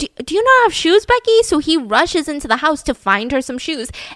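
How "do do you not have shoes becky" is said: high and loud, sounding incredulous. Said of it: "So he's like".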